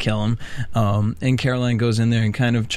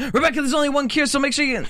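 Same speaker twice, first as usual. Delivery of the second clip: put-on, very high, rushed screaming. Recapping a tv episode, quoting a character's line on the phone; retelling a scream. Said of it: "just screams out".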